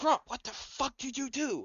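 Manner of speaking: loud, high-pitched stage whisper. Telling a story, speaker acts out someone whispering loudly at grump. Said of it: "you hear like someone whisper loudly".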